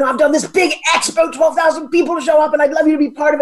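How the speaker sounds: put-on English accent. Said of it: "with his English accent".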